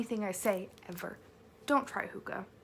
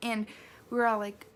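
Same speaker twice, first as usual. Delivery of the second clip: ordinary talk, nothing marked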